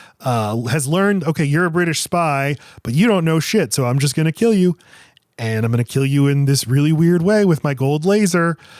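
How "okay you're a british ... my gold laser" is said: usual speaking voice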